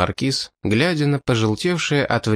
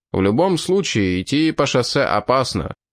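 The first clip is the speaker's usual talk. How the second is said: ordinary delivery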